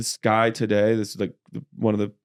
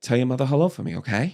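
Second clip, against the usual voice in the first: high, whispery put-on voice; 3 semitones higher than usual. Showing Andy Samberg's take on Mark Wahlberg: high whisper. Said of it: "Wahlberg was probably some of Andy Samberg's".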